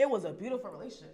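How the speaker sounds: tearful voice, close to crying. Describing a six-year relationship that ended: on the verge of tears. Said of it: "I'm about to start crying right now".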